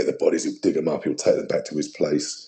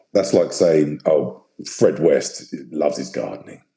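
ordinary talk, nothing marked

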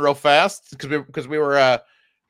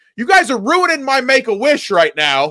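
put-on, high-pitched yelling projected loudly; 9 semitones higher, 4 dB louder than usual. Recounting getting upset about missing the show, retelling a yell. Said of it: "and I'm yelling shit like".

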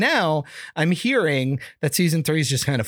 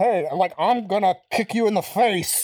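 muffled voice like speaking into a bucket, higher-pitched; 3 semitones higher than usual. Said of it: "It sounds like he's talking in a bucket".

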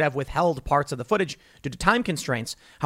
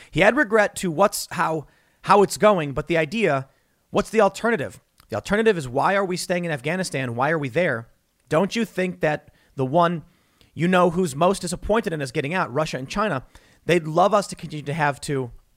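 ordinary talk, nothing marked

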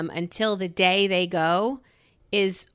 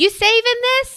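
put-on slight Southern accent, very high, loud yelling; 7 dB louder than usual. Retelling what the cleaning guy yelled in the house: imitating a little southern accent.

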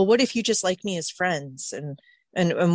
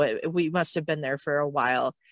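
ordinary delivery

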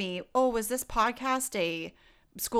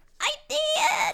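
silly, weird put-on little voice, much higher pitch; 4 dB louder than usual. Answering a co-host who noticed the book she brought, in a weird little voice. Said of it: "that was a weird little voice".

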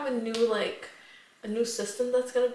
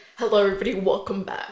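aggressive, angry news-anchor voice; 3 semitones lower, 5 dB louder than usual. Repeating how you just opened the show for your co-host, imitating an angry news anchor. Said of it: "I was trying to give like angry news anchor".

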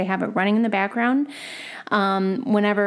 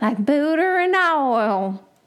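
put-on southern drawl, pitched higher; 6 semitones higher than usual. Showing how saying southern makes the drawl come out: Paula Deen impression. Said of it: "it just comes out like".

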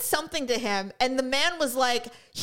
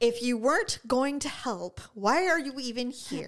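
plain

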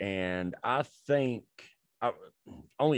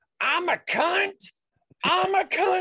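mock, very high, shrill, drawn-out screaming; 5 dB louder than usual. Retelling what she said after slamming on the brakes: imitating someone screaming. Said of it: "just starts screaming it".

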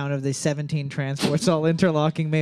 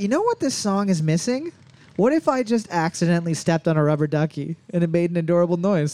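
ordinary delivery

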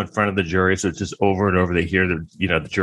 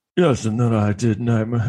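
put-on British accent with a lilt; 3 semitones higher than usual. Speaker describing an actor going through his career: Johnny Depp British accent. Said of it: "again, the accent".

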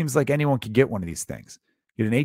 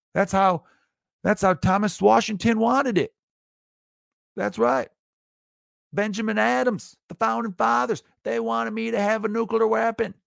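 mock Southern accent, higher; 10 semitones higher than usual. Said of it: "you get the accent".

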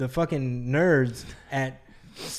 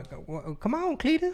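put-on very high old lady voice; 12 semitones higher, 5 dB quieter than usual. Teasing another speaker about how they talk: Nutty Professor old lady voice. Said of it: "you sound like, like the old lady on".

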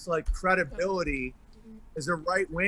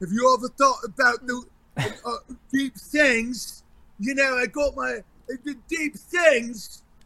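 pitched-up, pondering, musing guru voice; 6 semitones higher, 3 dB louder than usual. Mocking a celebrity who talks about deep things: Russell Brand impression. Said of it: "like Russell Brand, where he's like".

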